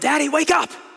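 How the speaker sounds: put-on very high, very loud, shrill children's yelling. Retelling how the kids would yell to wake him up: imitating kids yelling. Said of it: "they would start to yell".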